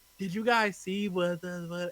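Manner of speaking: dull, unenthused, dry, flat tone. Mocking how others talk on podcasts: imitating a dry delivery. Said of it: "this dry delivery of".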